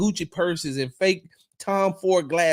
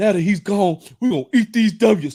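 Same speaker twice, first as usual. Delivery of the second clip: loud, goofy, hyped-up delivery; 6 dB louder than usual. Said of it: "You might as well say".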